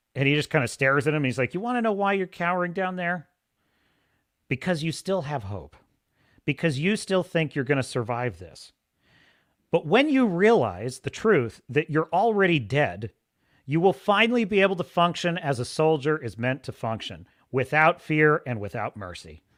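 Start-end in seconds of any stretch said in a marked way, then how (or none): none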